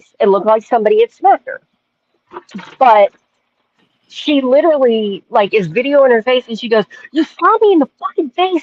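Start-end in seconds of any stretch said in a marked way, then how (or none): 7.1-8.6 mock angry, anger-filled cry, very high. Retelling a woman's words in her video about being smacked; imitating an angry woman. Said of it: "she's got this anger in her voice".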